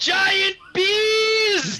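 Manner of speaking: put-on high yell with long stretched "bees". Calling out to people passed on the road in the game: yelling. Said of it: "I yelled".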